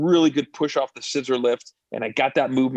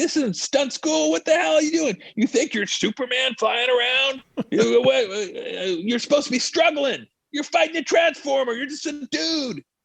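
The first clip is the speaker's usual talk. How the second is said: put-on, very high, furious, angry yelled tirade; 12 semitones higher than usual. Recounting being yelled at by the director during a stunt, imitating an angry director yelling. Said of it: "I'm getting yelled at by the director".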